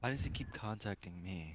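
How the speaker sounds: very quiet half-whisper. Speaking in character to the rest of the group: half-whispering in character. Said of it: "My character whispers to the rest".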